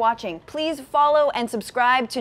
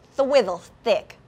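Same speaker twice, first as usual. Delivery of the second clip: lisp on every s sound. Saying a phrase they like to say a certain way: lisped s sounds. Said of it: "I like saying swizzle stick with a lisp".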